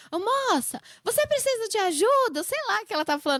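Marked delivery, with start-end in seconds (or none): 0.1-2.4 play-acted, high, slow, drawn-out calling shout. Speaker retells a stranger at the mall shouting at someone: imitating a woman shouting. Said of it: "gritando assim".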